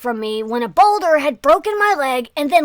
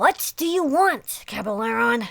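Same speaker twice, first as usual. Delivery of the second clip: hushed, insistent, half-demanding tone; 3 semitones lower, 5 dB quieter than usual. Narrating a story, a woman confronts Caballero, hushed and almost demanding. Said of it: "she almost demanded in a hushed tone".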